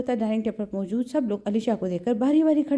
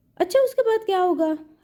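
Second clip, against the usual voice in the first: teasing, mocking copied tone, pitched up; 7 semitones higher than usual. Reading a story aloud, the young man teases by copying her tone: mimicking her tone. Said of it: "अली ने वफा वाली टोन में कहा, जैसे उसकी नकल उतार रहा हो".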